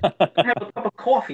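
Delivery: newly acquired put-on Boston accent. Retelling a sister back from boston ordering coffee: imitating a boston accent. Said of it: "She actually picked up that accent".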